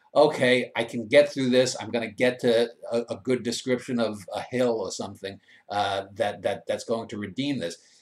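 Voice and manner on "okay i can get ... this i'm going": ordinary delivery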